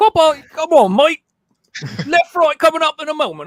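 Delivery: bad Australian accent, very high and very loud. Speaker imitates the Australian option on their GPS, in a bad Australian GPS accent. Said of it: "have like an Australian option".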